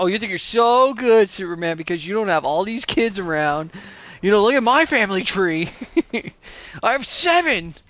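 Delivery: angry, boastful, resentful voice. Acting out Batman being really mad at Superman: imitating Batman angry. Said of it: "Batman's, like, really mad at Superman".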